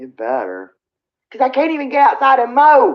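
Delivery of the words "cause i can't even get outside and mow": raised voice pushed up, pitch climbing, pressing harder. Chatting with another person, speaker suddenly speaks with a raised voice. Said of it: "I didn't mean to raise my voice".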